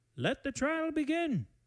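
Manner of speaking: distant, faint, very high-pitched voice. Voicing the headmaster as the iron door slams shut: faint headmaster voice. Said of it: "Very faintly".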